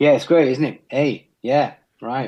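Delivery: put-on New Zealand accent, statements rising at the end. Explaining how Kiwis turn everything into a question, in a Kiwi accent. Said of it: "give us a short version of your best Kiwi accent".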